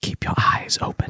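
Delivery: faint, breathy, barely-there whisper, very quiet. Game master voices words the player barely hears before waking: very quiet voice. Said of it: "very,very quietly".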